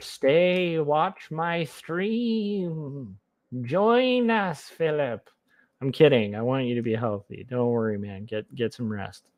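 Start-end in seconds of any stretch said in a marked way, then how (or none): 0.0-5.3 very slow, high, sinister evil demon voice. Streamer playing the demon on a viewer's shoulder, in an evil shoulder-demon voice. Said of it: "my evil voice on the shoulder voice".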